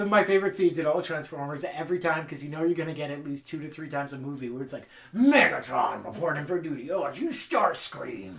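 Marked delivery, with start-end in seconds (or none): 5.1-8.3 theatrical robot villain voice, slow, swooping, grand, drawn-out. Quoting a favorite Transformers scene: Megatron voice. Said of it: "I just like the voice".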